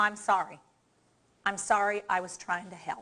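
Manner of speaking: sincere, heartfelt, truly meant delivery. Demonstrating a phrase for listeners to try with partners: sincere apology. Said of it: "Sound like you mean it".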